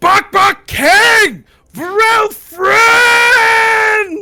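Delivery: shrill, booming, very high, slow, drawn-out goblin shout. The goblin king yells to an approaching party, Bok Bok goblin king yelling. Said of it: "He yells out".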